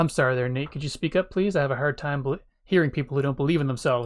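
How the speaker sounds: ordinary talk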